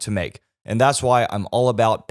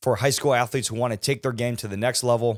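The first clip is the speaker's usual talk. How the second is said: ordinary delivery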